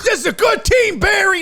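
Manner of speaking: very high, loud, pissed-off angry shout. Retelling a man screaming at the speaker from his car, imitating an angry rant. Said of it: "Like he was pissed".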